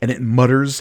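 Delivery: ordinary delivery, nothing marked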